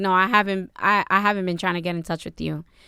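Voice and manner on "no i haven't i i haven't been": usual speaking voice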